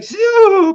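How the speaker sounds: play-acted winded, very high, very loud breathless gasp. Retelling calling out after being hit in the chest: imitating being out of breath. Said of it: "just out of breath".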